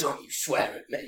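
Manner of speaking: put-on menacing, breathy, hushed near-whisper. Retelling what a man said to a teenager's face: imitating a threatening warning. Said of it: "so threatening and menacing".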